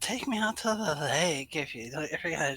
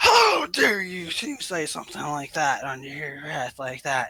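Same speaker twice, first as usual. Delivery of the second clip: booming, full-volume voice; 4 dB louder than usual. Voicing a character confronting someone for muttering under his breath, booming voice. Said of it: "it just booms through the hallway".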